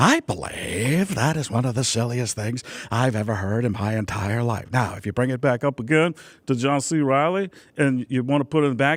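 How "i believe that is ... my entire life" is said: low, deep, throaty character voice. Showing how bringing the voice down changes it: Paul Giamatti voice. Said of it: "it becomes Paul Giamatti".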